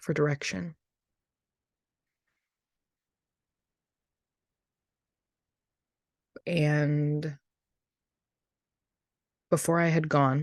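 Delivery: slow, deliberate speech. Speaker sharing a testimony, apologizing for the pace: talking slowly. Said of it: "I'm talking slow".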